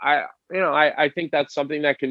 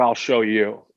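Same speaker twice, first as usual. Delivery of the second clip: put-on angry defiance, lower; 3 semitones lower than usual. Describing how a player reacts when a coach challenges him: imitating a pissed-off Kevin Hayes. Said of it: "he gets pissed".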